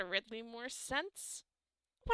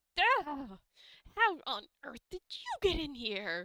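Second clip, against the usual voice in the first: sudden, startled yelp of surprise; 4 semitones higher, 4 dB louder than usual. Narrating a game, the speaker voices a man caught off guard by the players: startled yelp. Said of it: "he sort of yelps like".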